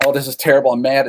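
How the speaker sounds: plain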